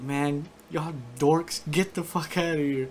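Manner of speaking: mock half-asleep, groggy voice. Retelling what a half-asleep dude told everyone in the dorm; mock half-asleep. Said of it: "he was like halfway asleep".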